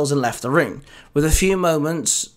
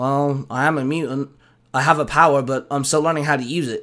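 plain reading voice

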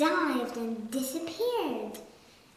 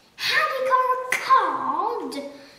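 very high, very loud disgusted shout, "cod" drawn out; 10 semitones higher, 8 dB louder than usual. The Duke responds to the Pelican's request: shouted, spitting out the words. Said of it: "Shouted the Duke, spitting out the words".

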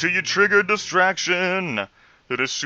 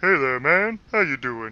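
mocking, condescending troll voice, talking down; 4 semitones lower, 4 dB quieter than usual. Showing the voice used with friends back in college, troll voice. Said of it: "would just use this troll voice".

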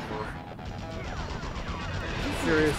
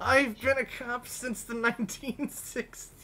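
put-on elderly voice, much higher; 9 semitones higher than usual. A performer voices an old cop sent to take down Spider-Man: old man voice. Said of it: "I can't do an old man voice".

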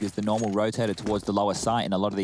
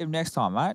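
high put-on Australian accent, stressing mate; 7 semitones higher than usual. Repeating another speaker's line back, in a mock australian accent. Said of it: "Why is he Australian?".

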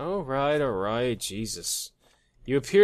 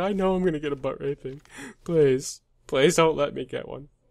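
acted-out tearful, crying, begging plea; 4 semitones higher than usual. While detaining people, the speaker voices a man who is already crying, mock crying. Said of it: "This guy's like already crying".

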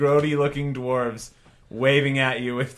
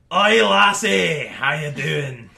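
put-on old dwarf character voice; 3 semitones higher, 4 dB louder than usual. An old dwarf at a tavern table greets a newcomer, in an old dwarf character voice. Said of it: "He's like short for dwarf standards. ... You see a table of three old grody looking dwarves waving at you with Tabitha waving at you as you dance. ... Oi, lassie".

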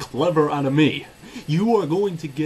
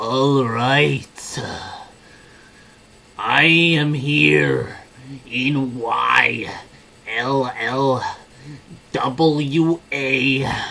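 mock raspy pretty-boy voice, lower; 4 semitones lower than usual. Mocking an opponent's on-camera talk: imitating a rival, raspy pretty-boy voice. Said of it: "goes on camera going".

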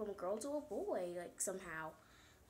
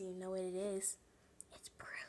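creepy put-on voice, much lower, faster; 3 semitones lower than usual. Host opening today's episode of Proof for the fans, in a creepy voice. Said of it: "With my creepy voice".

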